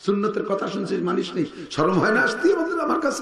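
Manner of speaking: high-pitched, scornful, laughing voice.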